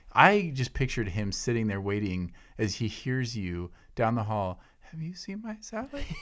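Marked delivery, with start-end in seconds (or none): 4.9-6.0 squeaky, soft, very high mouse-like voice. Picturing the other speaker down the hall, do a mouse-like impression of them. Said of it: "more and more mouse-like with your impression of me".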